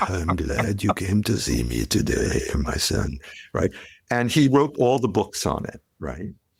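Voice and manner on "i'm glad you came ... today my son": low, hushed put-on mafia boss voice. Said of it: "talked like, you know, the godfather, like Marlon Brando is like".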